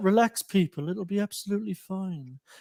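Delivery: soft, soothing reassuring tone. Imitating Charlie staying calm in the last twenty minutes: soothing tones. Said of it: "those soothing tones he has".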